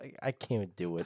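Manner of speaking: ordinary delivery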